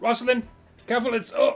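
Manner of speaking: urgent, high, alarmed cry, broken off. In a role-play, a character shouts to Rosalind as Arctos falls down the cliff, yelling. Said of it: "you're pretty loud. Stop yelling".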